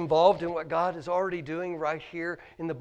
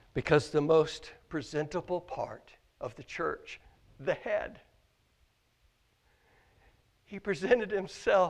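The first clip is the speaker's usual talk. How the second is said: choked-up voice, catching with emotion. Speaker addressing listeners, getting choked up. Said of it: "I don't know why I'm getting choked up about this".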